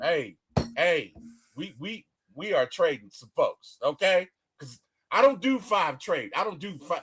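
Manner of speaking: mad, insistent, forceful voice, acted out. Retelling how someone announced trading picks: imitating someone sounding mad. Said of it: "He said it like he was mad".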